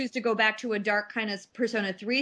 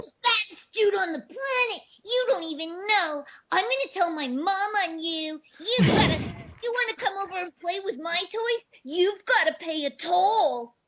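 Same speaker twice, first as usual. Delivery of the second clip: put-on very high, mean, arrogant, snobby, bratty little boy; 9 semitones higher than usual. Describing a mean little boy, then acting him out: mean snobby little kid voice. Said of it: "like some little like dipshit kid who's real mean and snobby and like arrogant".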